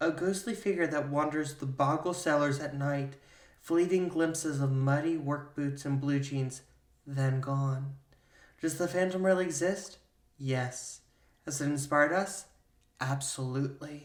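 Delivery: seductive, sensual, sultry reading. Presenting this week's wine pairing by reading its description, sensual reading. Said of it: "Why did you read that so sensually?".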